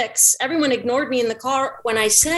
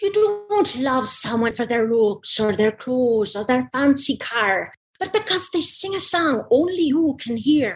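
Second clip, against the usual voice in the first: Irish-accented delivery. Speaker trying out accents, showing a favourite one: Irish accent. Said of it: "I have this Irish one that I like".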